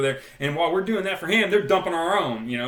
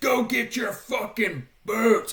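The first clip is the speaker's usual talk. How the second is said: put-on shrieked drill-instructor voice, high and screaming; 9 semitones higher than usual. Recalling the boot pile in the squad bay, the speaker quotes them screaming at us: imitating screaming. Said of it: "they're just screaming at us".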